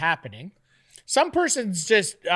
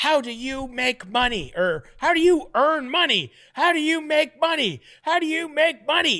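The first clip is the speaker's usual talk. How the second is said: put-on screaming voice, pitched up; 5 semitones higher than usual. Recounting how the listener screamed a question at him, imitating someone screaming. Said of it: "when you're just like screaming at him".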